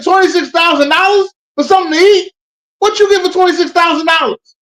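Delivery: shrill, very high, loud outburst. Retelling a movie scene, imitating the dad from Wolf of Wall Street. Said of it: "I sound like the dad from, uh, Wolf of Wall Street".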